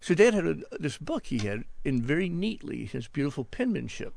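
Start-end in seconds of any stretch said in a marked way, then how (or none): none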